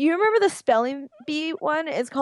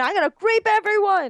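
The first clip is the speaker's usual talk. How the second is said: mock, wild, high-pitched, manic scream; 7 semitones higher than usual. Retelling a comedy sketch where a man in a grape suit ties everyone up: imitating someone screaming. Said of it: "he's just screaming".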